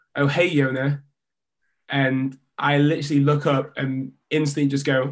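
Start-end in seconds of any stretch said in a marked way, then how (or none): 0.1-1.0 put-on American accent, louder. Retelling a greeting heard on stepping out a door: imitating an American voice. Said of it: "I heard this American voice go".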